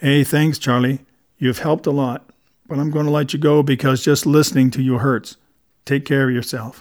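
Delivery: plain reading voice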